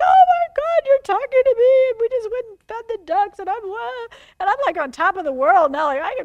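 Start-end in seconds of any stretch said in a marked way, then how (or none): 0.0-1.9 play-acted boo-hoo crying, very high and loud. Speaker recounting reading a book chapter at home, imitating own past crying. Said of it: "boo-hoo, crying like".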